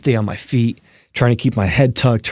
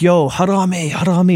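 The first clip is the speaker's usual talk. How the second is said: put-on screaming, pitched higher; 7 semitones higher than usual. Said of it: "I'm screaming just like".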